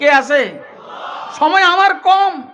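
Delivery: high-pitched, loud shouting voice.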